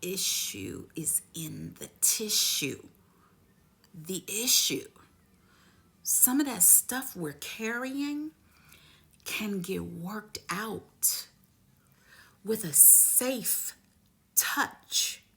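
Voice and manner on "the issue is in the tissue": put-on German accent. Quoting a massage therapist's saying: imitating a German accent. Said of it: "with her German accent".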